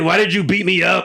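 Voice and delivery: put-on gruff voice. Imitating how a wrestler talks in promos: imitating someone's gruff voice. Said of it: "He's a little gruff".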